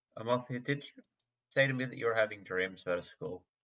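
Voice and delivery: close, secretive, soft half-whisper. In a role-play scene, a character bends to another's ear and asks, half-whispering. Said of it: "bend down in her ear and whisper".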